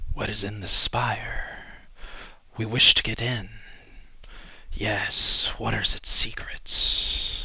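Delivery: eerie, whispering voice. Game master voicing the void whispering to the players, whispering void voice. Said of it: "you hear the whispering of the void".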